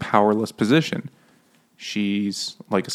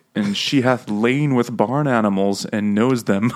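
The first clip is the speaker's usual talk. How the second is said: usual speaking voice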